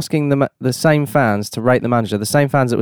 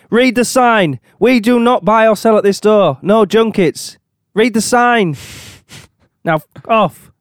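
furious, irate rant, very high and slow; 9 semitones higher, 4 dB louder than usual. Acting out a resident answering the door: angry local resident voice. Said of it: "just an angry resident of the Everton area".

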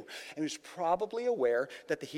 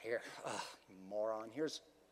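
put-on irritated sighing voice, lower and quieter; 7 semitones lower, 10 dB quieter than usual. Showing how Jesus did not speak: imitating an irritated, sighing Jesus. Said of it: "he didn't look at him and say he was irritated".

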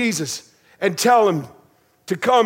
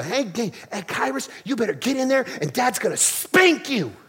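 put-on sassy, babyish little-girl toddler voice; 2 semitones higher, 5 dB quieter than usual. A dad retells what his little girl said while cleaning, imitating a babyish voice. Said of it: "this kind of babyish voice".

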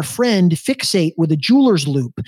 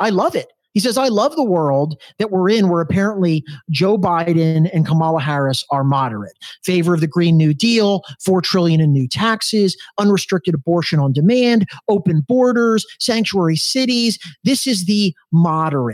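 usual speaking voice

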